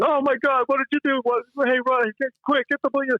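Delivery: high-pitched, frantic, panicked yelling.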